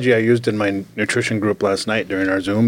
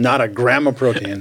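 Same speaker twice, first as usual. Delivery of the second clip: plain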